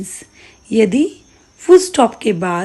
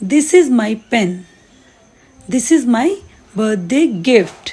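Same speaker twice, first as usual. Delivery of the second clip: brief pause after "pen", then continues. Explaining that you pause after a full stop: short pause after pen. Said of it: "जब मैंने next sentence start किया तो यहाँ मैं थोड़ा रुकी हूँ".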